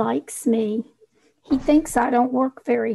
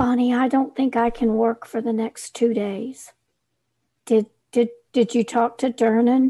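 normal talking voice

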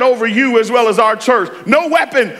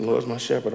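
muttered under the breath, quiet and indistinct; 12 semitones lower, 12 dB quieter than usual. Contrasting with those who say it bold and loud: mumbled, quiet and indistinct. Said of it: "we going to mumble".

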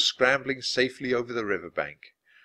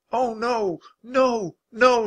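very high, very slow, drawn-out shout; 11 semitones higher, 4 dB louder than usual. Narrator voicing her as the wildebeest keep swimming across, shouting. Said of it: "shouted Annie".

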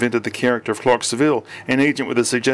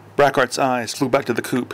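ordinary delivery

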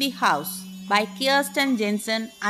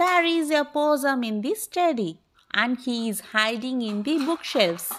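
ordinary delivery, nothing marked

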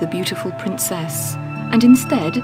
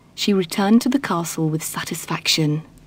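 ordinary delivery

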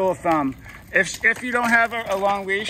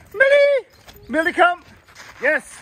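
very high, animated, excited calling voice; 11 semitones higher, 6 dB louder than usual. Showing someone how to call the dog Millie, giving an excited call. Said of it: "You have to become more exciting".

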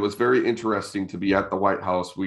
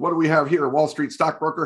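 light joking delivery with pitch raised; 8 semitones higher than usual. Retelling how a president joked with a soldier in a suit: imitating President Bush. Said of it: "That was a good impersonation right there".

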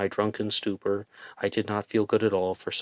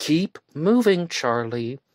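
raised, high, calling-out voice; 7 semitones higher, 5 dB louder than usual. Narrator reading a woman calling to charlie as he tries to sit down, called out. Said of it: "she called to me".

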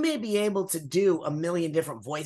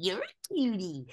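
put-on cooing baby talk, quieter; 3 semitones higher, 4 dB quieter than usual. Showing how people automatically talk to a baby: put-on baby talk. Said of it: "We automatically go".

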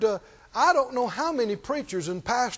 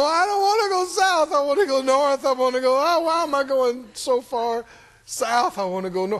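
fake, whiny, blubbering crying; 4 semitones higher, 4 dB louder than usual. Acting out someone pressing the accelerator while going the wrong way: mock crying. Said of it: "cry and go".

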